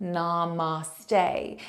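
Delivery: "namaste", drawn-out stressed final syllable "-ste". Explaining how namaste is pronounced: stressed, lengthened last syllable of namaste. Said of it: "putting the emphasis on the end of the word... It's also lengthened out".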